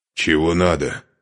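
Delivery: rasping, hoarse voice. A Chernigov guard, with Serega's blade at him, asks what he wants: hoarse. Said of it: "хрипло спросил он".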